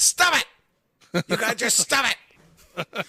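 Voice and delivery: shouted, high pitched.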